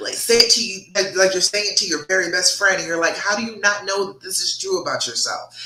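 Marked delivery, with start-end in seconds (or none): none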